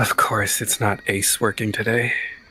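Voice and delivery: hushed whisper under the breath. A character speaks so only one companion can hear, whispering under breath. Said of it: "they whisper under their breath".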